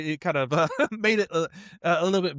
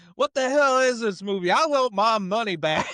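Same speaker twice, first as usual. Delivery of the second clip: full, raised, high-pitched yell; 7 semitones higher, 4 dB louder than usual. Retelling a man standing up in the balcony during a bad movie, retelling a yell. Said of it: "he yells".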